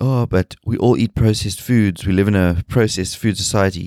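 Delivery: ordinary delivery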